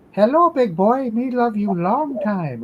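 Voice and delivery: very high, shrill, loud female baboon puppet voice. Retelling a cartoon scene where Ren works a female baboon puppet over the fence: imitating Ren's female baboon puppet voice. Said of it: "puppet on his hand and then sticks it over the fence and goes".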